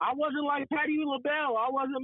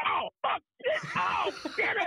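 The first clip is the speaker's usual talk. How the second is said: put-on angry cursing in a higher voice; 5 semitones higher than usual. Retelling a phone call when the Rockies got a hit: imitating Gary losing it, cursing. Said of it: "He starts losing his shit on the phone".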